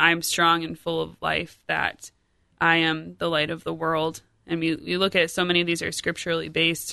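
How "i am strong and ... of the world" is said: normal talking voice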